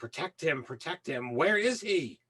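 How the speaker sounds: high-pitched, almost avian character cry. Storyteller voices a not-very-bright character yelling out: high-pitched, almost avian voice. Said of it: "in his like high pitched, almost avian voice".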